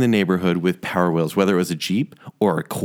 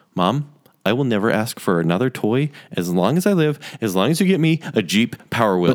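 usual speaking voice

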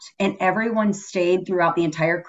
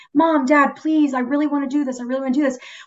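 put-on desperate, pleading child voice, begging; 7 semitones higher than usual. Acting out a kid's plea to mom and dad, imitating a kid begging. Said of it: "the kid's begging like".

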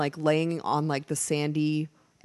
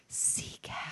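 hushed, very soft breathy whisper. Retelling what she said on a kayak beside Marcus: retelling own whisper. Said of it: "he just hears me whisper".

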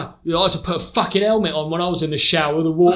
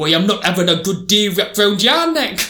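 put-on Newcastle Geordie accent. Voicing an imagined talking scarf bought in Newcastle, in a Geordie accent. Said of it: "talking to me in, like, a Geordie accent".

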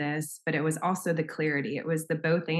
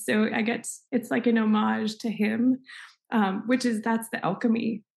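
speaking through tears, tearful crying voice; 6 semitones higher than usual. Speaker talking with someone in a session, crying. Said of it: "I'm crying anyway".

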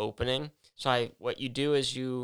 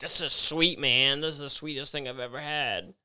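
mock-drunk voice, put on, slower; 2 semitones higher than usual. Speaker acts out a drunk friend looking at a beer label, imitating a drunk friend. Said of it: "that was such a weird impersonation".

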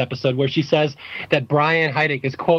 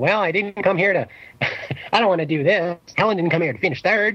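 feeble, whining, wimpy put-on little voice; 3 semitones higher than usual. Imitating Jim's wimpy little whiny voice: wimpy whiny imitation of Jim. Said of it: "he has a wimpy little whiny voice, and I love imitating him".

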